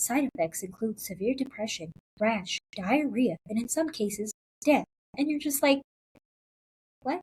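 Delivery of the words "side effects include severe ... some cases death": low pharma commercial disclaimer voiceover. Speaker mimics medical commercials listing side effects, in a low medical-commercial disclaimer voice. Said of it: "they go in a low voice".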